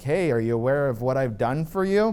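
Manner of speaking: normal talking voice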